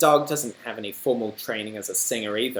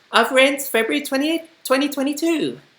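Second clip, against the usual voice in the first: put-on woman voice, much higher and louder; 5 dB louder than usual. Redubbing a misreadable date over his own voice in an edit: high-pitched woman voice. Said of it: "doing a high pitched woman voice".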